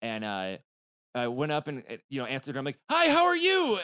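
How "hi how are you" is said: very high, loud, pained, forced put-on voice. Retelling greeting a pizza delivery person with a broken toe: imitating a grimacing smile. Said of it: "with just, like, a grimacing smile".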